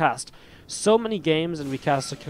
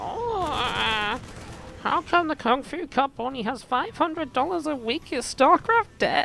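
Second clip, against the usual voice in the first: very high whine, stretched-out uh; 11 semitones higher than usual. Showing how to go into whiny mode and say something dumb, mock-whiny StarCraft impression. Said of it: "little bit of whiny mode".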